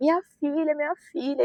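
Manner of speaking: put-on desperate weeping, high crying voice. Recalling waking up as her mother cried over her: imitating a mother crying. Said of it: "ela começou a chorar em cima de mim".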